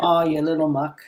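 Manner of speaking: put-on Irish accent. Giving an example of a word in use: Irish accent. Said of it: "Said with an Irish accent".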